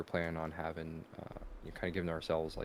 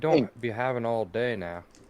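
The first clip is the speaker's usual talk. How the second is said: put-on very loud, high-pitched, terrible Cajun accent; 5 semitones higher, 10 dB louder than usual. A storyteller voices a character calling from deep within, attempted Cajun accent. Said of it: "I'm trying to go for for Cajun".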